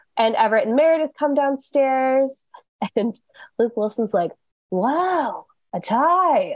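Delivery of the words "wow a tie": wow followed by a long, drawn-out tie. Retelling a scene where Everett and Meredith come downstairs, as Luke Wilson doing the Wilson wow. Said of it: "he's doing the Wilson wow".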